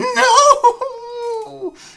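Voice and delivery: very high, very loud, shrill female wail. Narrator voicing a female character crying out: female impersonation cry. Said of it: "in my best female impersonation".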